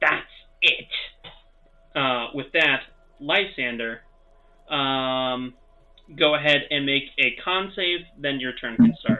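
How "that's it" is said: fed-up, irritated, annoyed anger. Voicing a creature whose cocky manner has faded: angry. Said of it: "gives you an angry look and says".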